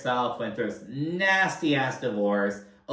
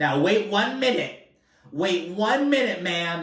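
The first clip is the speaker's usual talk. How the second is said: mock offended, high, indignant, sudden outburst; 6 semitones higher, 4 dB louder than usual. Act out a woman told that she overreacts when stressed, imitating someone instantly triggered. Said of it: "this sets Sutton the fuck off".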